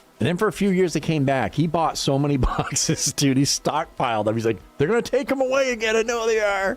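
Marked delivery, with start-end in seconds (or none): 4.8-6.8 put-on very high-pitched old man voice. Quoting a man who stockpiled boxes of snack cakes, in an old man voice. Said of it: "I've got him talking like an old man".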